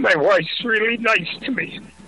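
crying. A caller thanks the hosts and talks about their wife: crying. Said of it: "I'm sorry for crying".

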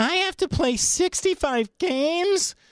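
high, slow, whiny complaining moan. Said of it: "bitching and moaning, going".

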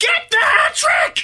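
shouting high and slow.

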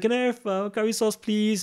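shy, high, teary-eyed voice. Retelling asking at the counter as a shy child, imitating own teary-eyed request.

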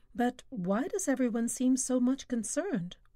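usual speaking voice

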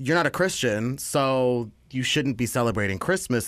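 plain

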